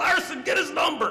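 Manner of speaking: very high, shrill, livid scream. Telling a football story about a man screaming at the guys, imitating someone screaming. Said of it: "He's screaming at guys".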